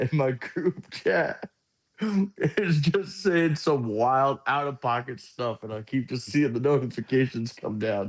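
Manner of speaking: slow speech, giggling through the words. Explaining to viewers why the group chat keeps interrupting, laughing while talking. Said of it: "I'm trying not to laugh".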